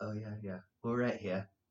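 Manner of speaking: very quiet, soft, deep manly murmur. Chatting about accents heard at camp, imitating them: mock deep manly voice. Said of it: "even their deep, manly voice is like".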